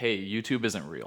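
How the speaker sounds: ordinary delivery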